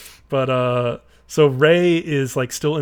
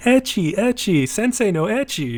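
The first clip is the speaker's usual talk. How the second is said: put-on sudden high, shrill yelling outburst; 8 semitones higher than usual. Retelling an anime scene where a character yells at the teacher: imitating a character yelling. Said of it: "Kakari just starts yelling".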